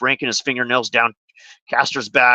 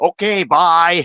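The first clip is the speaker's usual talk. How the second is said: louder, mock-sarcastic, dismissive, passive-aggressive tone; 5 semitones higher, 4 dB louder than usual. You recount what one man told another after people cussed each other out, imitating someone's sarcastic dismissal. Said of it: "that sounded really sarcastic to me".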